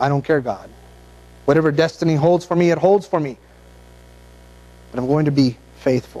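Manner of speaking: ordinary talk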